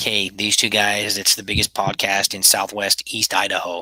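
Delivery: ordinary talk, nothing marked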